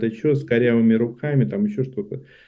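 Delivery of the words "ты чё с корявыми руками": normal talking voice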